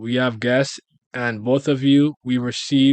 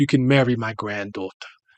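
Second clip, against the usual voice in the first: put-on English accent. Voicing a character who is impressed by someone: english accent. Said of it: "I don't know why I did that accent".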